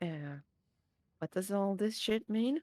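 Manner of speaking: quiet mutter under the breath. Sneaking over to another character and asking quietly: under the breath. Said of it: "just under my breath".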